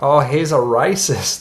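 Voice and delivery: terrible fake Australian accent. Canadian speaker demonstrating Australian pronunciation, bad Australian accent. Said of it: "an Australian might pronounce the word racist closer to racist... my accent is terrible".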